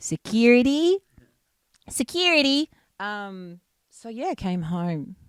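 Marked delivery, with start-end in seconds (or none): 0.0-2.7 Australian accent, spoken higher. Repeating a word that slipped out accented: Australian accent. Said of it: "my Aussie accent just came out".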